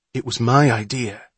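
plain

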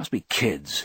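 ordinary talk

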